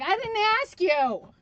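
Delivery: high, loud, rude snap. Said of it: "was not very nice to the thing".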